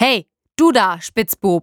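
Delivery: roaring, loud, drawn-out bellow. A soldier points at master saddler Pflug in his old uniform, bellowing. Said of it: "brüllte da ein Soldat".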